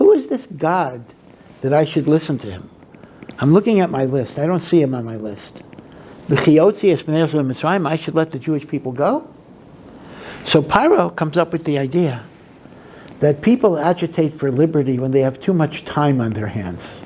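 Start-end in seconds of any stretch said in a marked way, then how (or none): none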